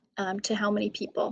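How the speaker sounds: ordinary talk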